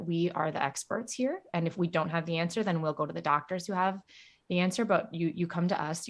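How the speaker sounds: ordinary talk, nothing marked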